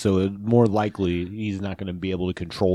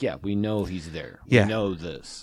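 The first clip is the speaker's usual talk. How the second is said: ordinary talk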